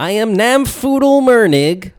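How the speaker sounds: high, loud, slow cartoonish gnome voice. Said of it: "Can you say Namfoodle in that voice".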